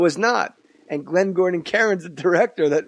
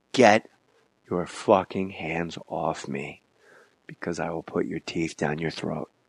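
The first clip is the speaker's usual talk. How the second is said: dead-calm, quiet, menacing, no bluster; 12 semitones lower, 7 dB quieter than usual. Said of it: "I get real calm".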